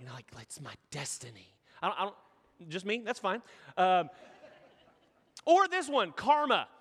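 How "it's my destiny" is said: theatrical, dramatic stage whisper, very soft and hushed. Showing how the word destiny has to be said: dramatic loud whisper. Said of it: "a loud whisper".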